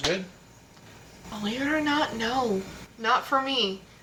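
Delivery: whispery tone, whispering. Answering whether the bourbon is worth a hundred dollars, whispery tone. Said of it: "in a very whispery tone".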